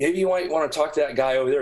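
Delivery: ordinary talk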